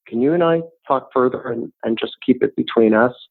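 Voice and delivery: put-on hushed, quiet tone. Retelling what one of the men asked after a talk: imitating a hushed tone. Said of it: "kind of in a hushed tone says".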